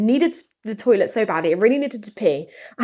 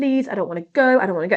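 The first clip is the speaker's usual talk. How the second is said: weeping, tearful, crying, pleading voice. Retelling begging a parent the night before camp: imitating own crying plea. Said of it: "I was crying to my mum, begging her".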